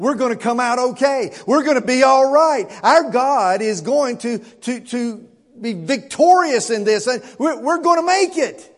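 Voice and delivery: acted eager excitement. Speaker voices Hezekiah praying over the letter; acting out excited speech. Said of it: "Can you hear the excitement in his voice".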